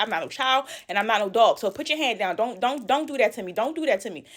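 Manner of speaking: put-on angry retorting tone. Retelling telling an older woman to put her hand down: retelling own angry words. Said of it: "right there, I was pissed off".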